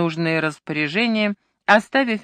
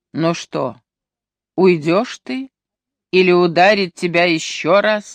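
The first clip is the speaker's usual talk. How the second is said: mocking, taunting; 4 dB louder than usual. Ayesha asks Ustane, who has collapsed to the floor, mocking. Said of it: "насмешливо спросила Айша".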